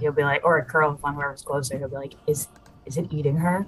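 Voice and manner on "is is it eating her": whispering in character. Voicing Zarek asking a companion a question: whispering in character. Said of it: "Zarek will whisper to, to Janek".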